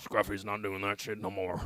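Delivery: cartoon character voice, soft. Telling a friend about quitting after two weeks of boredom, in a Scruffy voice. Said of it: "a pretty good scruffy".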